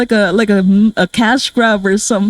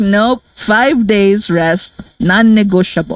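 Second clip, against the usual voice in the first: put-on heavy Filipino accent. Speaker quoting a doctor who ordered five days of rest, thick Filipino accent. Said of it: "Like with a really thick Filipino accent too".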